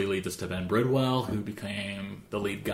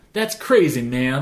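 booming, very loud, high Carolina southern drawl; 5 semitones higher, 9 dB louder than usual. Quoting the reply of a man from Carolina, imitating a southern drawl. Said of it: "like in his southern drawl that he has".

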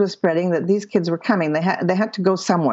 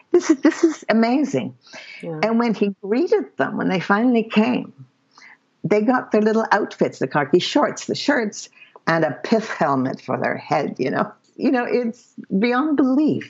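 moved, choked up, voice catching on words; 3 semitones higher than usual. Telling a story about a man, years later, choking up. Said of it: "I think I'm choking up even now".

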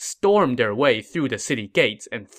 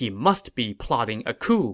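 ordinary delivery, nothing marked

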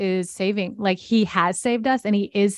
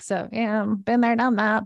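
put-on plain talking in an old-lady grandma voice; 3 semitones higher than usual. A speaker talking about readers slips into a grandma voice. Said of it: "my grandma voice just came out".

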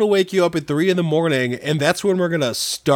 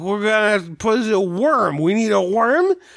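put-on voice of a drunk man; 4 semitones higher than usual. Acting out what a drunk guy would say, in a put-on drunk voice. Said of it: "I tried to make it sound drunk with the drunk voice".

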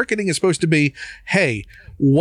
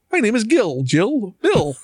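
slow, high, drawn-out put-on frog voice; 5 semitones higher than usual. Imagining an unnamed executive who sets prices; Muppets Take Manhattan frog executive. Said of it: "one of the frog marketings".

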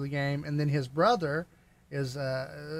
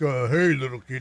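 put-on tough bad-guy villain voice, lower; 2 semitones lower, 4 dB louder than usual. Recalling the Thanos figure who walked by, the speaker imitates a tough bad-guy voice. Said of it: "Talking like this".

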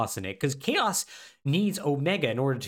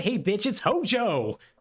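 put-on madman cackle, slower; 7 semitones higher than usual. Retelling a game scene, voicing Hojo cackling like a madman. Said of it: "I'm now going to cackle like a madman".

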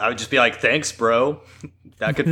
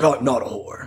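put-on voice of an old politician. Imagining how the line would sound, doing a Reagan voice. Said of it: "I was imagining the Reagan voice".

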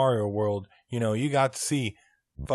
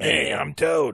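tiny little character voice, shrunk right down; 3 semitones higher than usual. Discussing a character with a friend, doing Toad's little voice. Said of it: "with his little voice".

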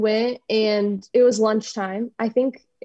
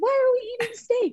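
put-on scream, higher pitch; 13 semitones higher, 3 dB quieter than usual. Retelling a coach turning around at lunch: imitating someone screaming. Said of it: "screaming at all of us".

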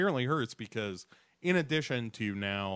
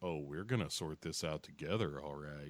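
put-on creepy voice, lower and quieter; 5 semitones lower, 8 dB quieter than usual. Retelling a TV scene, imitating Audrey: creepy Audrey voice. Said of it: "Why are you talking all creepy like that?".

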